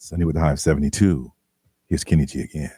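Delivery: very low jazz radio DJ voice. Joking about having once wanted to be a jazz host: jazz radio host voice. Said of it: "You can do that".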